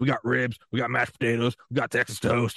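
put-on deep, gravelly, grumbling voice. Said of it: "just this deep, gravelly grumbling".

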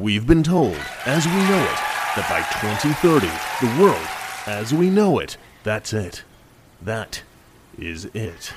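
put-on deep, low-pitched voice. Showing how the line is supposed to be done, the speaker uses a deeper voice. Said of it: "isn't it supposed to be done with kind of like a deeper voice".

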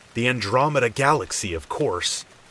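confident, matter-of-fact tone. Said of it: "He responded confidently".

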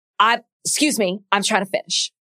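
put-on man's voice spoken through clenched teeth. Retelling how he clenched his teeth and cut her off: imitating Yosef through clenched teeth. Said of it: "clenched his teeth".

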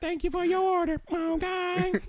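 very high, soft, squeaky, odd "okay".

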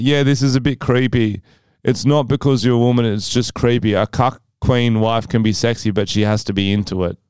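ordinary delivery

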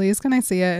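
imitated pleading, begging tone. Retelling a scene where she begs him to see the ring: imitating a pleading request. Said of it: "she begs him".

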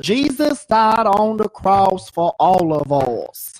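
very slow, loud, twangy, lisping preacher voice. Recalling a man from church, the speaker gives a lisping, twangy preacher impression. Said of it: "That's actually a very good impersonation".

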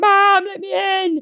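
put-on very high, drawn-out, sobbing, tearful screaming. Retelling banging on the door at night: imitating own screaming and crying. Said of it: "screaming, crying, being like".

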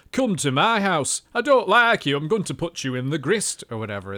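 put-on northern English accent. Demonstrating how northern English accents broadly sound: northern English accent. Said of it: "The North has many diverse accents".

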